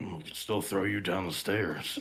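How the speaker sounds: grumbled aside, spoken to oneself. Player voicing their character's aside during the game, muttered under breath. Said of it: "I'll just like under my breath".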